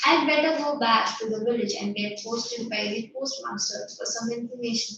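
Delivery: normal talking voice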